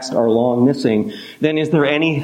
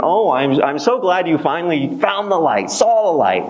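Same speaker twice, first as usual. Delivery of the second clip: smug, self-satisfied, pleased-with-itself tone; 4 semitones higher than usual. Imagining what the group might say to a friend who finally arrives, mock-smug. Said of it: "smugly saying".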